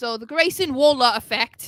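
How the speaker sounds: put-on British accent. Saying the name of a show segment: put-on british accent. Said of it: "that's me with my British accent".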